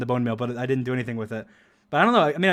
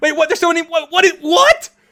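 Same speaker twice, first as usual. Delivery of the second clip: high, loud shouting, confused and panicked. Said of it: "he's just, like, so confused".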